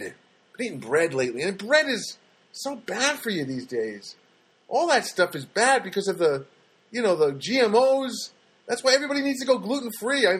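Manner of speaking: exasperated, frustrated venting with drawn-out "GMOs". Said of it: "you can hear the frustration in my voice".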